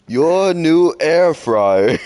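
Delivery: high-pitched, very drawn-out, slow delivery of every word. Retelling a yelled line from a parody video: Ewan McGregor impression yelling. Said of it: "in my best Ewan McGregor impression".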